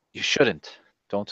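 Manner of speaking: whispered words. A player's character holds another character and whispers to her. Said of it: "and like whisper to her a little bit".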